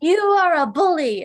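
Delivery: high, loud mock beast yelling.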